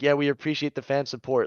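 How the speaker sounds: ordinary talk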